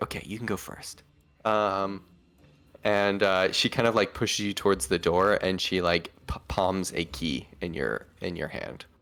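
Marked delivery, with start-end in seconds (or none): 0.0-1.0 very soft, quiet, hushed whisper. Voicing a character who lets a player go first: whispering. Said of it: "whispers as she's like".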